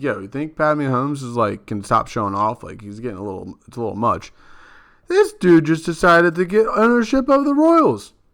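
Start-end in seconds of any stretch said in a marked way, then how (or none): none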